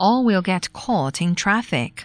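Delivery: plain reading voice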